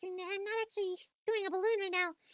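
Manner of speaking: very high, squeaky helium voice. Showing listeners a helium voice made without any balloon, in a helium voice. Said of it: "this is my helium voice".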